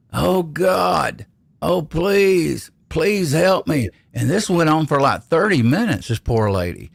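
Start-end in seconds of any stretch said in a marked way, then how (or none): 0.1-3.9 acted very slow, high pained holler, "God" stretched long. Retelling what a lady a few beds down was hollering: imitating someone hollering in pain. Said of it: "a lady a few beds down was hollering".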